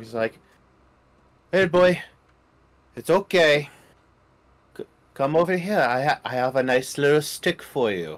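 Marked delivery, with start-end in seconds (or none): 1.5-8.2 soothing voice, higher. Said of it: "like I would approach my own dog".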